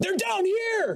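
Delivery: very high-pitched, loud shouting. Voicing a dog handler calling upstairs: handler shouting upstairs. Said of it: "He shouts back upstairs".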